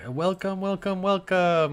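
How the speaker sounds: very high, loud, chipper voice, pitched way up.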